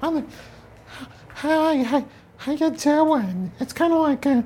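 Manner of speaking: put-on strange, extremely high New York accent. Imitating a man seen at the gym, in a high New York accent. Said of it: "he has a very strange and extremely high New York accent, like this".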